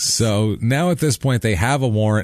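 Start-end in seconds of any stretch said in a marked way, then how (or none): none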